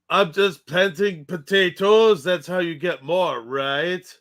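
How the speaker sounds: jokey put-on French accent. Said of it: "you just did one".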